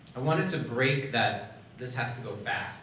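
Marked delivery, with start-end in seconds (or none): none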